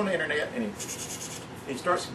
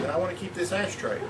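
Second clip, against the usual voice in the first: ordinary talk, nothing marked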